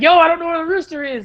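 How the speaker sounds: acted yell, voice up high. Telling a story about being stuck in a cage with a rooster, retelling his own yell. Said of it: "Like yelling".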